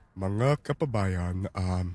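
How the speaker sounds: low, soft cartoon shrimp character voice. Performer asked by the host for a second voice, Matalino tiger shrimp voice. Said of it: "Give me a second voice here".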